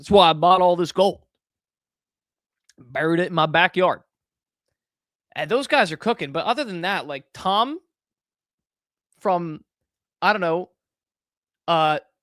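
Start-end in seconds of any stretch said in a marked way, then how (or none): 0.1-4.0 loud, terrible put-on Southern accent. Imitating those guys who say they were right, bad southern accent. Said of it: "that is the worst Southern accent ever".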